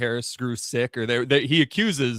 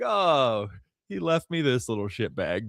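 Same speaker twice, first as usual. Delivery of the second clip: put-on joyful laughing voice. Retelling a scene where Daemon finds a prisoner: imitating Daemon laughing with pure joy. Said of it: "Damon's just laughing, pure joy".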